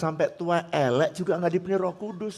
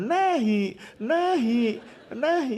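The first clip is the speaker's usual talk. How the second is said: put-on high, wailing baby cry, "nehi" drawn out; 6 semitones higher than usual. Joking about what an indian baby sounds like crying: mock baby crying. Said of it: "sambil nangis-nangisnya".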